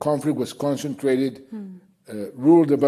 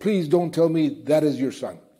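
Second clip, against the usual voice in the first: put-on tearful, crying speech; 2 semitones higher than usual. Retelling how a kneeling man spoke to a woman, imitating someone crying. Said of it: "started crying".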